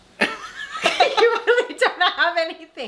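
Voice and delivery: high-pitched, slow, teasing laughing.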